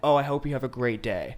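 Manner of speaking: ordinary talk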